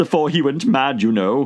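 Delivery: plain reading voice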